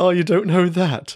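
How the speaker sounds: mock condescending tone. Describing how professionals ridicule people, mimicking them: mocking a condescending tone. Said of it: "They do it in a way where it's condescending".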